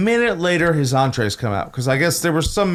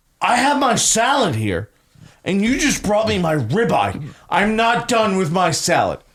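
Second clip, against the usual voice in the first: mock irate, angry complaining yell; 4 semitones higher than usual. Retelling what a man yelled at the speaker over his meal, retelling someone yelling. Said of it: "He's yelling this at me".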